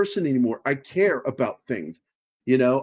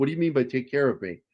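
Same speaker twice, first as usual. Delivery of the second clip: imitated panicked tone; 4 dB quieter than usual. Retelling a movie scene where a woman gets panicky: imitating a panicky voice. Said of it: "she gets panicky".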